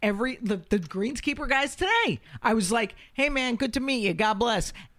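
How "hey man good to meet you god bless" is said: put-on mobster voice, much higher pitch. Retelling greeting the greenskeeper guys, the speaker uses a Sopranos-style mobster voice. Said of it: "I meant it soprano-y".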